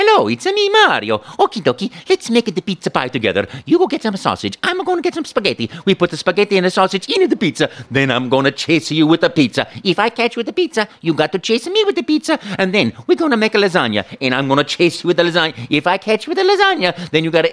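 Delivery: very high, swooping, sing-song cartoon voice. Retelling turning to the camera after hearing action, in Mario voice. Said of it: "I said in the voice you hear today".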